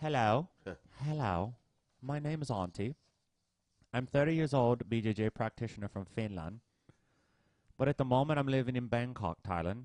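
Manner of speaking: put-on aged English gentleman's accent. Reading a listener's letter aloud on the show, in an old Englishman voice. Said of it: "I'm gonna read it like an old Englishman".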